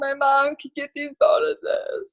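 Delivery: acted, slow, tearful, crying through the words. Retelling her reaction when the bonuses were announced, imitating her own crying. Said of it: "And I was like crying. I'm like".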